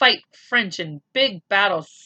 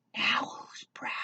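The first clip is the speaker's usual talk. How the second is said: very quiet, breathy, hushed whisper. A narrator reads Patrick's line, whispered to Omri: whispering. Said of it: "Patrick whispered to Omri".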